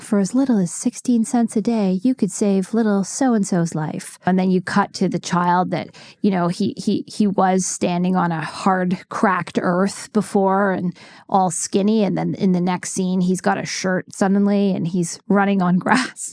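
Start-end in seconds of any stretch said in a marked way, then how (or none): 0.0-4.2 solemn, somber narrator voice with fake heartbreak. Describing charity commercials, the speaker imitates a somber charity-ad narrator voice. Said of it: "Some somber narrator's voice feigning heartbreak".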